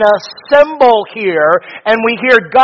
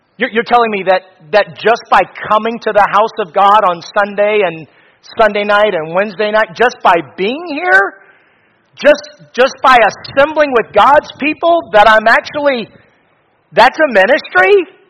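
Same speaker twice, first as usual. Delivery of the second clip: ordinary talk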